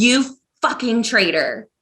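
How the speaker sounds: growling, accusing delivery. A character beside Solas confronts someone she calls a traitor, growling. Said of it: "She she growls".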